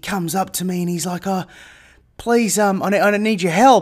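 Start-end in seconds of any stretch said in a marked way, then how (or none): 1.3-3.8 desperate, frantic, panicked voice with stammering. Retelling a man who approached on the walk: imitating a frantic panic. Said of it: "in a frantic panic".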